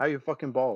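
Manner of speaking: punchy, confrontational, aggressive in-your-face delivery. Showing the other speaker how the greeting should be said, saying it aggressive. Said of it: "you gotta say it aggressive".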